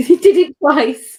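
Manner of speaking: high, loud, slow laughing.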